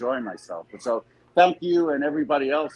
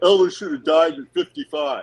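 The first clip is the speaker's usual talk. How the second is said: put-on dumb guy New York accent, higher, louder; 4 semitones higher, 5 dB louder than usual. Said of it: "he kinda had a dumb guy New York accent".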